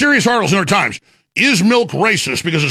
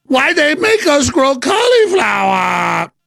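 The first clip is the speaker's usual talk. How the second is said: high-pitched, put-on Chinese accent; 8 semitones higher than usual. Mid-rant about gardening, the speaker announces it, then speaks in a put-on Chinese accent. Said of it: "Now I'm doing a Chinese accent".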